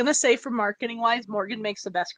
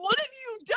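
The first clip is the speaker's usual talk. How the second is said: put-on sobbing, high, tearful crying voice; 14 semitones higher, 4 dB quieter than usual. Retelling a co-writer's reaction to a planned ending: imitating Morgan crying. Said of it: "Morgan's, like, crying, going".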